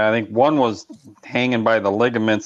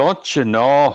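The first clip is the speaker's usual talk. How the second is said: put-on Minnesota accent; 4 semitones higher than usual. Joking about regional accents, a speaker repeats it in a mock minnesota accent. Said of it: "hitting you with the don't you knows".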